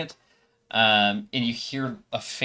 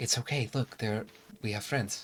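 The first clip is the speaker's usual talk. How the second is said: quiet soft whispering; 6 dB quieter than usual. Voicing a girl whispering to a crying boy: whispering girl character.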